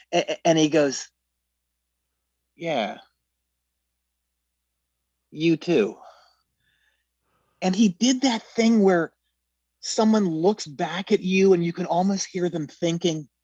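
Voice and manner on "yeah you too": mock scornful, disdainful, condescending tone. Retelling an actor's reply after looking the speaker up and down: imitating disdainful reply. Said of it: "almost this kind of disdain".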